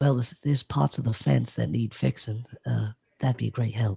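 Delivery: hushed, quiet, secretive tone. Voicing a little one answering so her mom won't notice: hushed. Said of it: "trying to, like, not have her mom notice".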